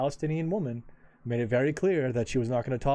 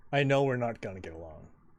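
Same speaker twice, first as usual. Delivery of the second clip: ordinary talk, nothing marked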